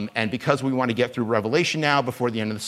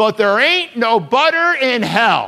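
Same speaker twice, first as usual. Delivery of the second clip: huge, loud booming shout, pitched very high; 11 semitones higher, 8 dB louder than usual. Retelling how a man addressed the crowd, in a big loud booming voice. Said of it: "this big, loud, booming voice".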